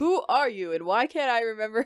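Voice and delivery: plain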